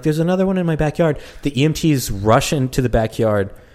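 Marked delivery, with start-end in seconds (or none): 0.0-1.2 woman's high, rushed scream. Recalling a wild night when a lady comes out to the EMTs: retelling a woman's scream. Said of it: "she's coming out screaming like".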